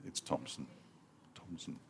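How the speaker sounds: hushed whisper, very quiet, barely audible. Peering through binoculars at a player's back to read his name: whispering. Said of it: "I don't know why I'm whispering".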